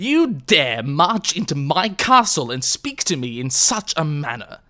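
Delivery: furious, heavily enunciated, every syllable hit hard. The king rounds on John in his castle: thick with rage, enunciated. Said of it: "His voice was thick with rage".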